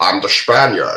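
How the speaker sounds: put-on spoken with Scottish accent. Joking about an actor who is always Scottish: Sean Connery impression. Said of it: "The Scottish accent".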